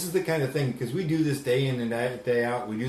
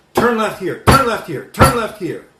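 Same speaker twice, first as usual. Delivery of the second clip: play-acted, very loud, booming, shrill, aggressive barking; 9 semitones higher, 12 dB louder than usual. Retelling a passenger in the back who kept giving directions; mock-aggressive commands. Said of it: "if you hear the tone of voice, the aggression".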